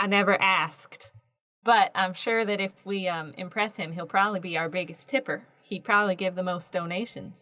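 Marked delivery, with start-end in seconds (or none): none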